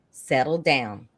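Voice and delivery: easy, unruffled, cool, calm, settling voice. Retelling a colleague calming a flustered new moderator: imitating Frank's cool, calm voice. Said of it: "he said it like this".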